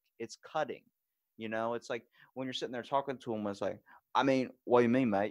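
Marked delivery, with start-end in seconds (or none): 4.2-5.3 put-on strong, thick, loud Australian accent. Retelling talking with Australians: imitating Australian accent. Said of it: "hearing theirs so strong".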